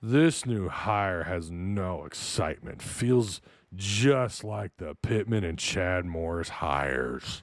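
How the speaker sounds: low, glum, mopey, joyless wet-blanket read. Reading out a written message about a new hire, in a Debbie Downer voice. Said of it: "I got to read it like a Debbie Downer".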